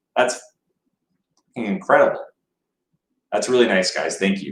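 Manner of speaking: deeply touched, grateful, heartfelt tone. Thanking everyone for supporting an incredible cause: deeply touched. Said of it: "I'm so touched".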